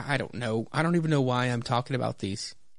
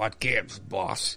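curt, sharp, snapped delivery; 4 semitones lower than usual. A hired killer answers his boss's summons, snapping. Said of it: "Snapped the man".

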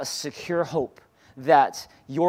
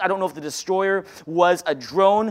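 plain

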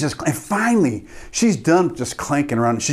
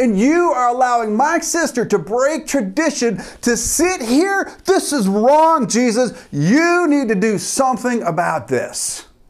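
put-on angry complaining yell, higher; 9 semitones higher than usual. Acting out a woman complaining to Jesus about her sister: imitating Martha yelling at God. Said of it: "this woman trying to yell at God".

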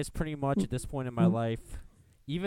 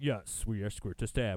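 radio announcer voice, much lower, quieter; 3 semitones lower, 4 dB quieter than usual. Host trying out a radio voice for the show's line; practice radio voice. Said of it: "I'm working on my radio voice".

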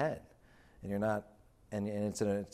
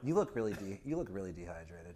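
put-on passive-aggressive tone. Acting out reverse-psychology taunts at a runner, delivered mock passive-aggressive. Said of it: "It would be like this little passive-aggressive thing".

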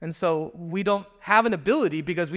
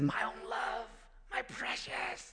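very quiet, slow whisper holding each word; 4 semitones higher, 14 dB quieter than usual. Retelling how Gollum holds the ring: Gollum voice. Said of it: "Not a song, but an, a voice".

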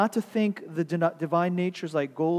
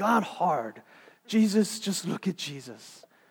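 put-on Korean accent, slow and deliberate. Quoting another man's words about Jesus, imitating his Korean accent. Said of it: "with his Korean accent".

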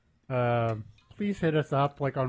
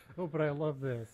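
ordinary talk

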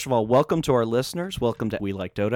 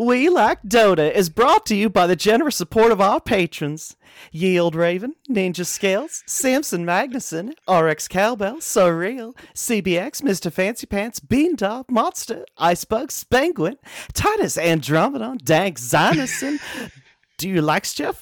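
put-on upper-class Southern belle accent, pitched up; 9 semitones higher, 4 dB louder than usual. Reading out the patron thanks as asked, in a southern belle accent. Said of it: "like a southern belle?".

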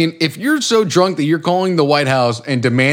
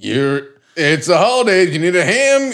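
put-on drunk old man voice, slower; 2 semitones higher than usual. Describing someone who screamed at it, imitating a drunk old fat dude. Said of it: "It's just some drunk old fat dude like".

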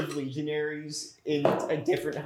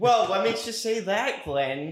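dry, sarcastic, pitched-up voice; 5 semitones higher, 3 dB louder than usual. Asking another player's character a question in character: sarcastic in-character question. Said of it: "that was sarcasm".

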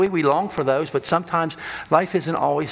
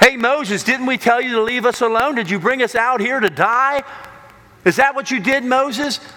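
high-pitched shouting crowd voice; 8 semitones higher, 4 dB louder than usual. Retelling a bible passage, acting out people yelling at moses. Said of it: "as they start yelling at Moses".

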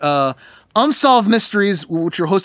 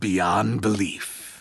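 very deep, hushed, dramatic movie trailer voice; 12 semitones lower, 10 dB quieter than usual. Plugging a show on Amazon, speaker does a Don LaFontaine voice. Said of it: "the intonations of Don LaFontaine that go a little something like this".

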